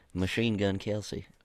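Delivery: southern-sounding voice. Introducing a bride in a put-on bit, southern-sounding voice. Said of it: "It kind of sounds southern".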